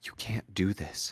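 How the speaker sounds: hushed whisper. Your sister grabs Lucas's shoulder and speaks to him, whispering. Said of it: "she whispers to you".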